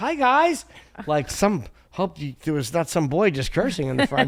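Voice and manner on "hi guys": very high, casual, breezy, butter-wouldn't-melt innocence. Retelling walking in on the parents: imitating acting slick and innocent. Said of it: "I tried to be slick, and I walked in like".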